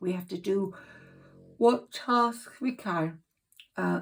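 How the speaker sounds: words yawned out mid-sentence. Giving an astrology reading while tired, yawning. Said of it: "I'm sorry for yawning".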